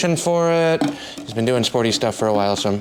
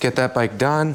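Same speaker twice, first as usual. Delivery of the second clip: ordinary delivery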